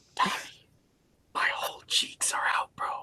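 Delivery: soft, hushed whisper, very close. Retelling how a friend leaned over at a diner: imitating Matt whispering. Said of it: "leans over to me and whispers in my ear".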